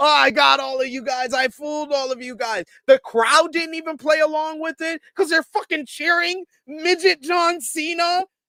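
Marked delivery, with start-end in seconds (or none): 0.0-2.7 put-on laughing speech, higher. Picturing what the camera should have shown: imitating someone laughing while talking. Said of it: "Dom laughing like".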